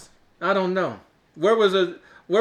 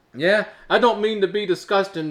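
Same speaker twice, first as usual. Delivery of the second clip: plain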